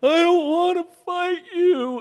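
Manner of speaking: acted, high, tearful crying voice. Retelling a childhood fight, imitating a brother crying while punching. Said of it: "Tyler starts crying, like".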